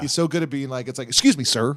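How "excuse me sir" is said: stern, professional tone. Praising how another comedian plays a professional guy: Cheech as a stern professional. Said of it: "a stern, like, you know, professional guy".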